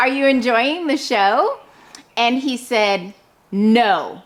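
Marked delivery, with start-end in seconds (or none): 0.0-1.6 really cheerful voice. Retelling speaking to a man who just stood there watching, in a recreated really cheerful voice. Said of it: "just in a really cheerful voice".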